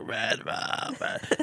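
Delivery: hushed whisper with lots of breath. Retelling a daughter speaking at bedtime: Danny from The Shining voice. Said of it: "speaking like Danny d-, was from Shining".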